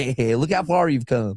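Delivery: laughter running through the words. Retelling the boss's reaction to an old audition video: imitating Uncle John laughing while talking. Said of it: "he was laughing at me like".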